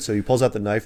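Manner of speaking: normal talking voice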